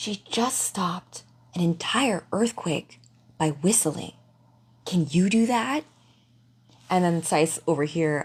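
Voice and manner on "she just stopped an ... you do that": hushed whisper. Retelling what another character whispered back to her, in a whisper. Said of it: "says back to her in a whisper".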